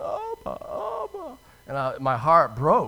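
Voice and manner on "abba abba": mock little girl crying, much higher and quieter. Telling of finding a lost little girl at night, imitating the little girl crying. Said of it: "she's just crying, going".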